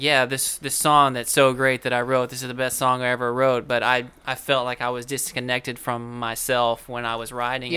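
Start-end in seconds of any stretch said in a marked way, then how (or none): none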